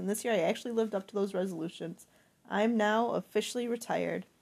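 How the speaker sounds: plain reading voice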